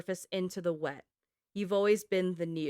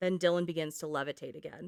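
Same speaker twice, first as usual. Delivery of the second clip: ordinary talk, nothing marked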